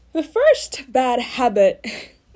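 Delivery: very loud, slow voice that cracks. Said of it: "what happened to my voice there?".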